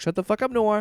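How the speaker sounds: put-on sing-song delivery. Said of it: "such a beautiful, like, tempo".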